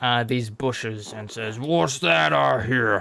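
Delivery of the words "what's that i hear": ogre-like brute monster voice, forceful and barreling. Voicing an ogre barreling through bushes: ogre speaking. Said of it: "this ogre comes barreling through".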